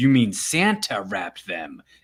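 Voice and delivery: loaded, menacing, threatening tone. Discussing the Superman films, the speaker acts out Superman's line in a mock-threatening tone. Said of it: "kind of a threatening tone".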